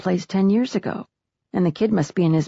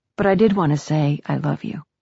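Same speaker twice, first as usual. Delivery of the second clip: ordinary delivery, nothing marked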